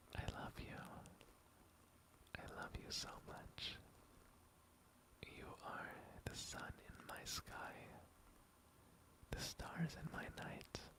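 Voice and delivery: soft whisper. Showing what to say into a sleeping listener's ear: whispering. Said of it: "I whisper terribly naughty things into your ears".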